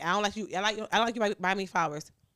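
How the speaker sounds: ordinary talk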